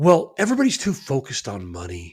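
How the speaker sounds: mild delivery, edges rounded off. Retelling what he said in a follow-up interview, imitating his super soft voice. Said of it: "in his super soft voice".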